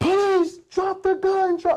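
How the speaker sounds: mock, very high, loud screaming. Recounting drawing down on an armed subject, the speaker quotes his order: retelling a scream. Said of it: "And I'm screaming".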